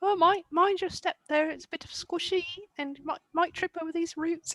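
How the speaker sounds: gallant, very high-pitched little voice. Playing Mogmoth, giving another character little instructions, muttering under his breath. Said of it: "under his breath the whole time".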